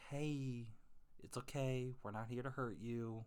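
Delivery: understanding, sympathetic, gentle delivery. Demonstrating how to speak to someone who sees you as a threat, understanding voice. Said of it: "speak to them in an understanding voice".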